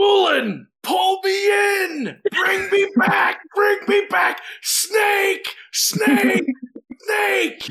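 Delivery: very high, shrill, panicked, ungodly screaming yell. Player's character caught in a giant snake's coil, ungodly scream. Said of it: "I'm going to let out an ungodly scream and yell".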